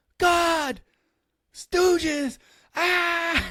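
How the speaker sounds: frantic, startled, very high shriek. Retelling how a man woke screaming in bed beside his wife; retelling a frantic scream. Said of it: "he is screaming in bed".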